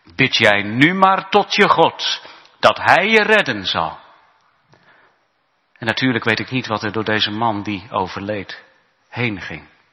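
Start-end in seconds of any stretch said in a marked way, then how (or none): 0.2-4.0 mock derisive, contemptuous, scornful jeer. Retelling what an attacker said to a man bleeding on the ground, retelling a mocking taunt. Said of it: "spotte die extremist".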